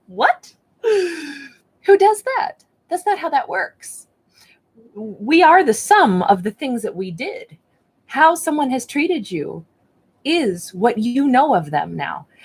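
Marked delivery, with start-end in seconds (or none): 0.2-4.1 very high, giggly, laughing through the words. Speaker reacts to what someone did, laughing. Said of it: "I'm laughing because".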